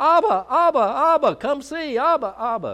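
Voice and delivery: put-on very high, loud, excited little-boy calling voice. The speaker recalls a little boy running to call his dad, high-pitched little boy voice. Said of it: "that little high-pitched voice".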